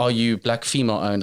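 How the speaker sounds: ordinary delivery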